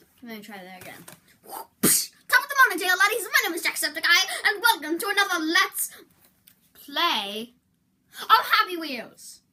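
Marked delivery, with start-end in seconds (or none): 1.4-9.3 very loud, high, enthusiastic belted delivery. Opening a Let's Play video, imitating Jacksepticeye. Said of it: "my Jacksepticeye impression".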